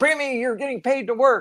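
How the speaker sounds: high-pitched yelling. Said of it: "Drew had to yell at Preemie".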